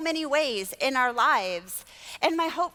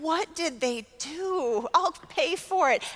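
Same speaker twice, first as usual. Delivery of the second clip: put-on slow, tearful speaking through crying. Recalling a woman asking about her boys in the toy section, retelling crying while speaking. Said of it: "And I'm just crying".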